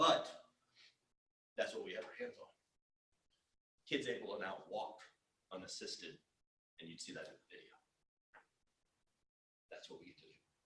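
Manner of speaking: voice catching with emotion. Speaking about kids now able to walk, getting emotional. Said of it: "Can't believe I'm getting an emotional mess up here".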